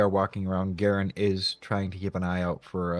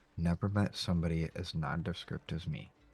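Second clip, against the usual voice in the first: grumbling character voice, quieter; 3 semitones lower, 9 dB quieter than usual. Player voices Garen leaving the Wicker Goat, Garen grumbling under breath. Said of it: "kind of grumble under his breath".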